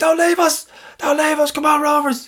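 put-on boozy, drunken pleading, pitched way up. Retelling calling out from a car on the drive home, imitating drunken pleading. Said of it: "so I'm full of booze".

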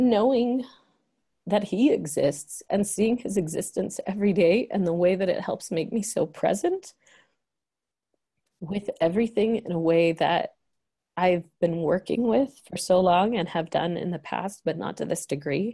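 teary voice, choking up, on the verge of tears. A father speaking, teary and about to cry. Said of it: "And of course I'm going to cry".

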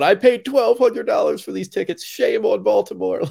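put-on high screaming lady. Recounting a concert crowd story, retelling a lady's scream. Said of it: "some lady screamed out".

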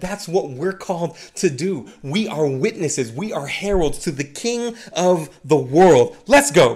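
fired-up, charged-up, preacher-like rousing delivery. Preaching to listeners addressed as friends: a little charged up. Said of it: "I'm a little charged up".

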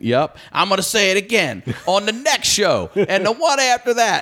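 play-acted, shrill screaming at very high pitch. Retelling screaming during a show as the crowd came in: retelling a scream. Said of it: "and I'm screaming".

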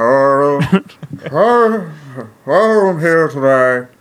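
very slow voice with every word drawn out. Trying out an impression for the others: Tom Brokaw impression. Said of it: "this is my Tom Brokaw impression".

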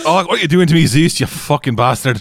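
put-on high voice, Scottish accent growing ever stronger. Acting out a character shouting at Zeus: increasingly Scottish accent. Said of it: "starts getting more and more Scottish".

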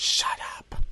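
hushed, breathy, menacing, threatening whisper. Playing a caller on a threats CD, phoning someone hated: whispered threat. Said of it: "when you can just whisper threat".

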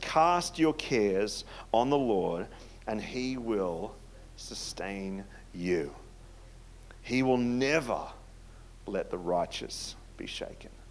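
slow reading pace. Speaker reads a bible verse aloud to listeners, reading slowly. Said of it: "I'm going to read it slow".

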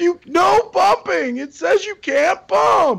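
mock very high, stretched-out, drawn-out screaming. Retelling a ride where they yelled at their dad: retelling own past screaming. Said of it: "I'm screaming at my dad the entire time".

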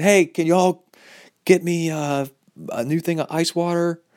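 high, drawn-out call carried across a distance. Retelling calling for ice water from the porta can: imitating a yell. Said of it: "I could yell from the porta can".

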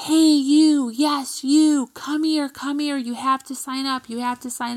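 put-on elderly screaming. Retelling how club seniors called a student back: imitating seniors screaming. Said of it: "started screaming at Elijah".

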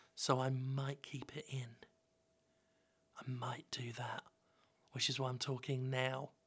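whispered speech. Recording a talk about Lawnmower Man, speaker explains why he's talking now, whispering. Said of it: "I don't know why I'm whispering".

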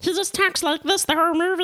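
very high-pitched, menacing killer rabbit voice.

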